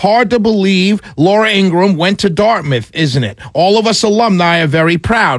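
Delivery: ordinary talk, nothing marked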